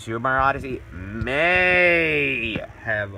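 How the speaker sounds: may drawn out slow and heavy. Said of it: "Emphasis on the word may".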